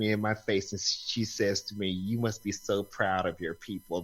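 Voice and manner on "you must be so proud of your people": put-on low, nasty little old-lady voice. Retelling what a customer said to them, imitating a nasty old lady. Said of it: "the nasty little little old lady tone".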